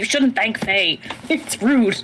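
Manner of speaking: slow, unhurried stage half-whisper. Half-whispering an aside to another character during a scene, half-whispering. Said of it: "I'm like whispering at Kelly".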